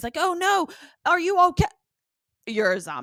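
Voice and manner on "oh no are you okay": put-on very high, loud exclamation in a British accent. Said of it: "and he's so British".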